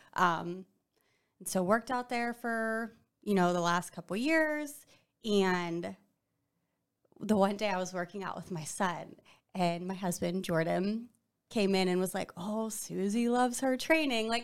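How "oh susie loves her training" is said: put-on light, wisecracking, smart joking tease. Retelling a husband's remark during a workout: imitating Jordan's smart joking manner. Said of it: "kind of in a little, like, smart, you know, joking manner".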